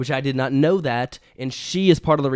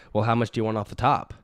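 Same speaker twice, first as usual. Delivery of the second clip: mock sassy, stern, firm, mean, curt tone; 3 semitones lower than usual. Repeating the hairdresser's question more exactly: imitating a firm, mean hairdresser. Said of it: "firm and mean".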